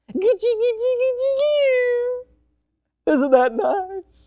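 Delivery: put-on very high, slow cooing baby talk, long drawn coo. Showing how fathers talk to their babies, cooing baby talk. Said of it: "We talk like this with our children".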